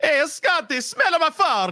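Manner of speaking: very high, squeaky, put-on Italian accent. Acting out T J addressing Scotty, in T J's Italian accent. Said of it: "A t- T J Italian accent".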